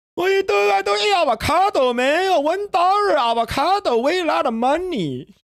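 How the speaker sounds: voice pushed way up high. Retelling how his dad reacts to being offered avocado toast: imitating his dad. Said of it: "He's like".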